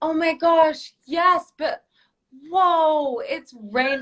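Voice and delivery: high, fake, put-on excited cheer. Showing how they answer their kids: put-on enthusiastic tone. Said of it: "use that kind of enthusiastic thing".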